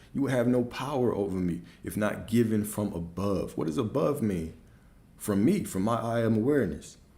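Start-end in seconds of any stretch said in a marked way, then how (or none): none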